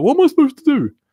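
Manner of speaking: high, loud, baffled and confused cry. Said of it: "and I was like".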